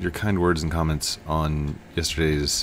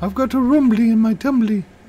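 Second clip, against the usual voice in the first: squeaky, very high, loud put-on cartoon character voice; 5 dB louder than usual. Doing an impression that is close enough, in a Winnie the Pooh voice. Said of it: "I'm kind of sounding like Winnie the Pooh there. ... He doesn't sound exactly like that, but it's close".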